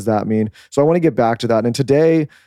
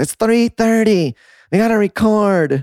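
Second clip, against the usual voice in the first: very high, slow, drawn-out, exasperated, upset voice; 10 semitones higher than usual. Retelling what the wife said during a meltdown: imitating an upset voice. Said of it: "That's how she talks when she's upset".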